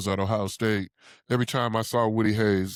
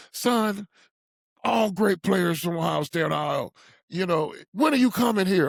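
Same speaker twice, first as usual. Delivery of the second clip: high, screaming, badgering hollering; 9 semitones higher than usual. Retelling a phone call where the coach yelled about committing: imitating Woody Hayes hollering. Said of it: "in his voice, he started, uh, proceeded to holler at me and started screaming at me like".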